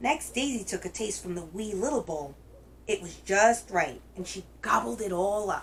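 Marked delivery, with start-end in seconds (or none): none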